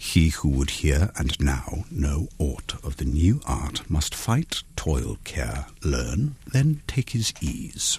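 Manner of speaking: put-on English accent. Asked to try the English accent again, reading a phonetic passage in an English accent. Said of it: "give another shot of your English accent".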